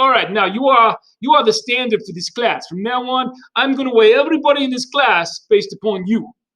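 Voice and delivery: put-on New York accent. Playing someone addressing a class of kids, in a New York accent. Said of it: "why are you talking in a New York accent?".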